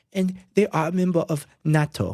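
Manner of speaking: fake Israeli accent, laid on thick. Quoting a podcast guest on Turkey: Jonathan Pollard impression with fake Israeli accent. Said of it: "the fake Israeli accent version of it".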